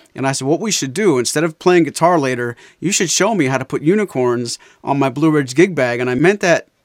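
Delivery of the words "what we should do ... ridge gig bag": normal talking voice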